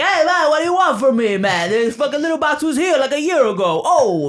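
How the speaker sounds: put-on old Brooklyn accent. Voicing the old cat that gets yelled at: Tammany Hall Brooklyn accent. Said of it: "a Tammany Hall kind of accent".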